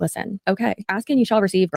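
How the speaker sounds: ordinary delivery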